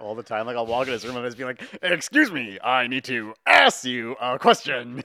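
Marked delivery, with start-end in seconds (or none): 1.8-5.0 booming, loud, very slow voice, every word stretched. Retelling a joke done on Matt: Ace Ventura talking-butt voice. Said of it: "The talking ass. I still do that".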